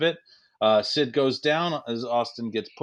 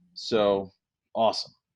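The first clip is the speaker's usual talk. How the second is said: ordinary talk, nothing marked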